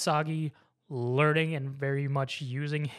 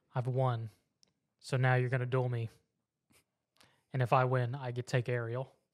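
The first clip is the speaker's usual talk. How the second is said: plain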